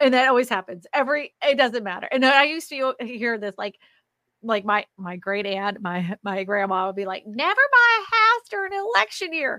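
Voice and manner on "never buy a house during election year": fake, put-on Southern accent, pitched very high. Quoting a great aunt and grandma's old advice, put-on Southern accent. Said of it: "I gave them Southern accents".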